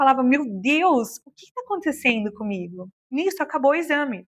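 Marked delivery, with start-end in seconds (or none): 0.2-2.9 mock tearful, weeping voice, speaking through tears. Retelling own words said during a medical exam: retelling own crying words. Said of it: "eu chorava".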